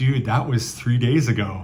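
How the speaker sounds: plain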